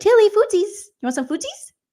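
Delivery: put-on very high, cutesy, sing-song baby talk. Showing how they talk to their cat: retelling baby talk to a cat. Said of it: "I talk to my cat like that".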